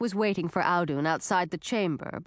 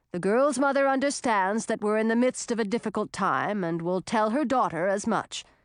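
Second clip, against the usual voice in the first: ordinary delivery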